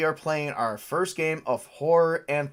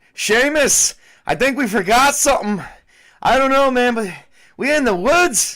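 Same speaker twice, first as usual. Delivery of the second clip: put-on Irish accent, high and loud; 9 semitones higher, 10 dB louder than usual. Showing the Irish voice planned for a horror game character: put-on Irish accent. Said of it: "do an Irishman's voice".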